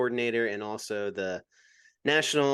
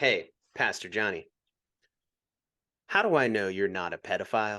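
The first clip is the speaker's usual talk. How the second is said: imitated deadpan, emotionless tone; 2 semitones lower than usual. Retelling a parent's question asked without a smile: imitating a deadpan question. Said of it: "without any smile, without any emotion".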